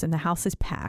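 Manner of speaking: ordinary talk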